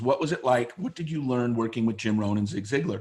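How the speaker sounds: normal talking voice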